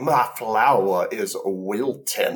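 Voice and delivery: put-on fancy, refined-sounding Southern accent. Describing how Bobby gets taught to be fancy; Bobby's fancy Southern accent. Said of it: "he starts talking like".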